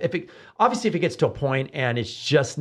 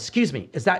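mock very harsh, snarky tone, pitched up; 6 semitones higher than usual. A flight attendant speaks to parents grabbing their child on a plane, very harsh voice. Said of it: "goes in the very harsh voice".

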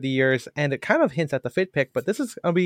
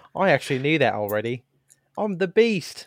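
put-on British voice. Mocking a trivia show host in a British voice: Richard Ayoade voice. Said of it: "I make him sound like, uh, like, um, Richard Ayoade".

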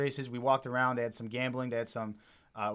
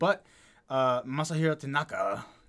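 Japanese-sounding accent on the name; 3 dB louder than usual. Talking baseball results, the speaker says a pitcher's name in a put-on Japanese accent. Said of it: "Did I do that in a Japanese voice?".

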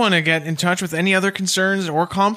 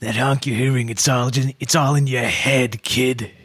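put-on creepy man voice; 7 semitones lower than usual. Pitching a sound idea to the others, in a creepy voice. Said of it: "like a creepy voice saying".

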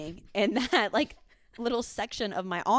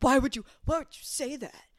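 put-on anger, defensive tone; 4 semitones higher than usual. Retelling how a friend reacted to a joke: imitating someone angry. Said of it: "He was so mad".

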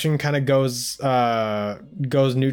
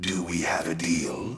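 put-on ominous ghost voice, lower and quieter; 8 semitones lower, 8 dB quieter than usual. Quoting a ghostly figure's voice line offering a deal: imitating an ominous ghostly figure's voice line. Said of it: "coolest voice lines whenever he delivers the".

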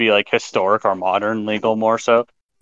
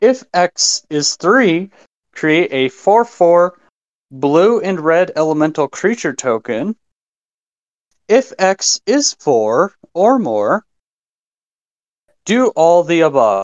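slow, careful, word-by-word reading, pitched up; 6 semitones higher than usual. Going through a long card text aloud, reading slowly. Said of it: "I'm going to go through this as slow as possible".

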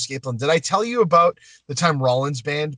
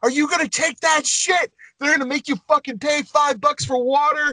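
very high, put-on screaming rant; 13 semitones higher than usual. Retelling a fined performer screaming to the crowd from a soapbox: imitating someone screaming. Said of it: "started screaming".

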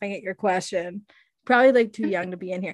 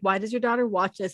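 usual speaking voice

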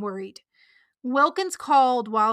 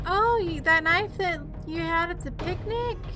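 put-on innocence, higher pitch, brushing it off; 6 semitones higher, 3 dB quieter than usual. Retelling a plot where a character plays it off: imitating someone playing it off. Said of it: "she tries to play it off like".

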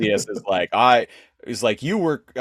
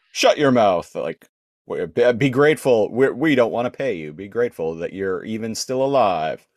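ordinary talk

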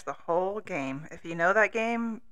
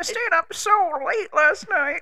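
put-on elderly woman voice; 12 semitones higher, 6 dB louder than usual. Chatting about staying up late, old lady voice. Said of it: "That was my old lady voice".

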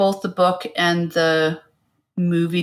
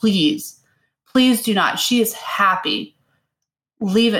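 slow, put-on pleading, begging voice; 4 semitones higher than usual. Retelling how a character begs to keep a child: imitating a pleading plea. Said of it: "And she's pleading".

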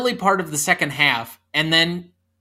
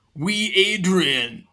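put-on, bad French accent. Joking about a film scene, imitating Stallone doing a French accent. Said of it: "Stallone doing a French accent".

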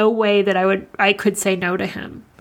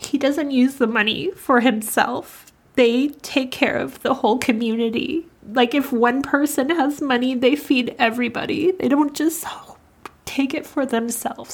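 choked-up, tearful, near crying; 4 semitones higher than usual. Asking viewers to donate to a man's family, about to cry. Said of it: "I'm definitely gonna cry saying this".

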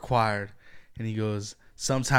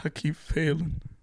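high, cracking, breaking voice on the verge of tears; 5 semitones higher, 5 dB quieter than usual. Recalling a Last of Us scene, imitating Pedro Pascal's breaking voice. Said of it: "he was crying, so his voice was breaking".

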